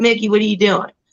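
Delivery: put-on drawled Southern accent. Quoting a large man opening the door, imitating a southern drawl. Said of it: "he has a southern draw and he'd be like".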